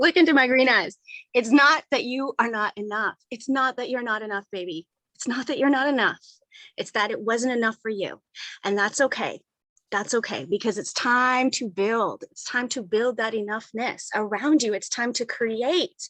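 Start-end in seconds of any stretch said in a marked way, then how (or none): none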